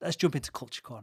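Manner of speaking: smooth, quick, gliding delivery. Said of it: "did you see how smooth he said that?".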